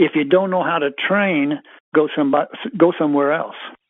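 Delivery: ordinary delivery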